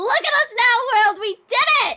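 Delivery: ear-splitting, very high shriek. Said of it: "you made my eardrums bleed".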